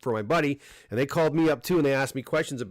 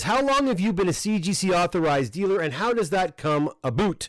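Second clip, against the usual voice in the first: put-on Canadian accent, pitched up; 5 semitones higher than usual. Reading a viewer's question aloud, in a Canadian accent. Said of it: "That's my Canadian accent there".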